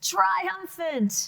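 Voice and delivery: strong, loud delivery. Showing a class how to say the word: loud. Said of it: "I like it loud though".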